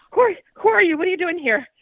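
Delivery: breathless, rushed, fast. Retelling thinking someone had broken in, confronting them: retelling talking fast, out of breath. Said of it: "I'm like talking really fast. I'm like out of breath".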